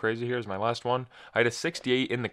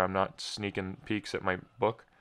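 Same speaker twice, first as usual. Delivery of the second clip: usual speaking voice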